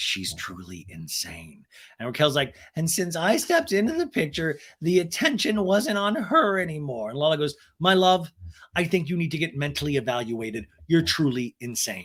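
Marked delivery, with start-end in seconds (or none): 0.0-1.6 very soft, low, hushed whisper. Recapping a scene, retelling what one woman said, retelling a whisper. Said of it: "Lala whispers".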